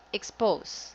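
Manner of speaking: expose said very fast. Showing how some people misread the word: saying expose very fast. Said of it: "very fast".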